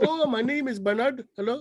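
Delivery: put-on Indian accent, pitched high. Retelling what a man said when he broke into an Indian tech support accent. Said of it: "he breaks into like uh Indian tech".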